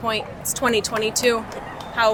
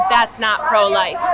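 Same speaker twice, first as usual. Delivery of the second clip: ordinary talk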